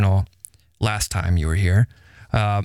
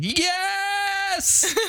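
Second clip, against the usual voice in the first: put-on very high, stretched-out, happy shriek; 3 dB quieter than usual. Retelling a library visit with an excited kid: imitating a child screaming. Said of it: "he just screams the whole time".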